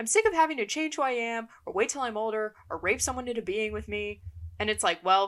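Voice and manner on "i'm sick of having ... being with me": put-on yelling, higher pitch. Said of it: "just starts, like, yelling at Derek".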